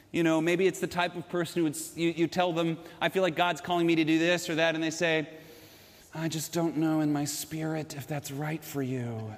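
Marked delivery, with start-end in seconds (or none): 6.1-9.3 slow, airy, pious-sounding spiritual voice. Imitating a certain type of person's reply, in an airy spiritual voice. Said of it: "they even talk in a spiritual voice and everything is very airy".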